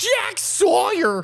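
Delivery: yelling high and loud. Repeating the commentator's call of a player's name: Gus Johnson impression. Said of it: "he goes".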